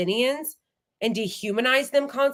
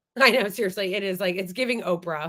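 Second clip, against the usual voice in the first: plain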